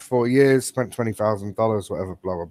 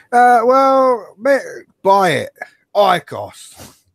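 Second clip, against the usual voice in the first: high, loud, cheesy mock advert voice. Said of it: "It's gonna be their advert".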